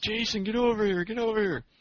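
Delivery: put-on very high, shrill, shrieking scream. Retelling a rickshaw driver screaming at him in Times Square; retelling a scream. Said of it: "He's screaming at me".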